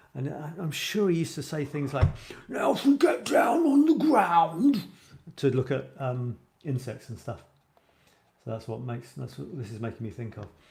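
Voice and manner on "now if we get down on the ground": big booming voice, very high, slow, drawn-out. Imitating a British TV naturalist telling viewers to get down: imitating a big voice. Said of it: "famous for having this big voice like this".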